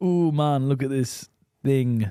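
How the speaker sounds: put-on Jamaican accent. Acting out a hypothetical Jamaican biology teacher, in a Jamaican accent. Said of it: "got a Jamaican accent and you're pointing".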